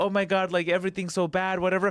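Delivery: put-on crying woman's voice. Retelling what a crying woman at a casino said: imitating a woman crying. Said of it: "she was, like, crying".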